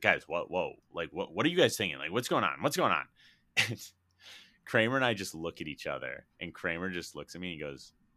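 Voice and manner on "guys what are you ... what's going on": mock freak-out, louder. Telling a story about friends, imitating a freaked-out friend. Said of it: "Like sort of like freak out".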